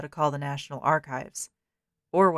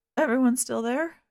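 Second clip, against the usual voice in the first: squeaking, pitched-up voice; 8 semitones higher than usual. Reading a story aloud, a terrified character checks the phone line: squeaking voice. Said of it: "Carl asked, his voice squeaking".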